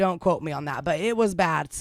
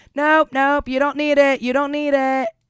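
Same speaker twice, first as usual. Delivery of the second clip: piercing loud screaming; 8 semitones higher, 8 dB louder than usual. Retelling how an employee screamed across the store: imitating someone screaming. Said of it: "screaming across the front end".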